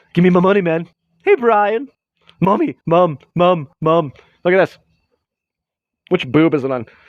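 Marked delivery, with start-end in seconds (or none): 0.2-4.2 slow, drawn-out cartoon character voice. Answering a request to do a Stewie voice: Stewie voice. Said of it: "could you do a Stewie voice?".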